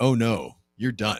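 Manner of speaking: normal talking voice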